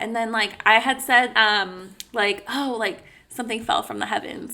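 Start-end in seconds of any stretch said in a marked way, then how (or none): 2.5-4.5 mocking, tongue-in-cheek, sarcastic throwaway tone. Retelling own remark after a loud noise: imitating own sarcastic remark. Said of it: "something fucking sarcastic".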